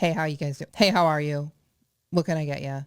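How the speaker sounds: bored, dutiful, routine delivery with no lift.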